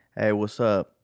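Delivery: gangster-sounding voice. Greeting the others as the recording starts, gangster-style greeting. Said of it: "Why do you say like a gangster?".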